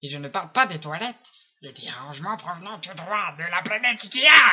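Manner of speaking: put-on loud, tiny goblin creature voice. Repeating an ikea ad line while the others laugh, little goblin voice. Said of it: "On dirait un petit gobelin!".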